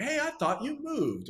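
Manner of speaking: very high shout. Retelling a neighbor calling out to someone: imitating Calvin shouting. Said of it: "he started shouting".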